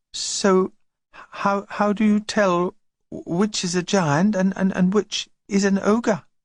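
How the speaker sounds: small, high, timid voice. Narrator reads a twin's question after hearing about ogres; small voice. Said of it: "In a small voice".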